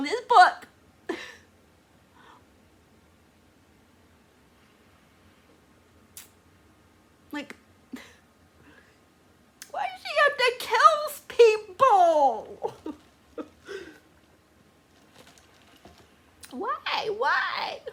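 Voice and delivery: high, loud speech through tears. Reacting to a character's death in a book, crying while talking. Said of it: "I don't know what to say besides I'm crying".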